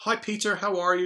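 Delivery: put-on British accent, way up high. Retelling a phone call, quoting Steve's greeting: Steve's British accent. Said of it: "in his wonderful British accent".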